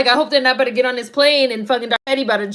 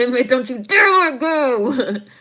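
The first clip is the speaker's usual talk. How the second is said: put-on speaking through teeth, slower. Speaker acting out own past self, talking through teeth. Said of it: "Me talking through my teeth".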